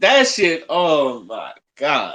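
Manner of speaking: disappointed, let-down tone. Talking about a movie: disappointed. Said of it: "you sound disappointed".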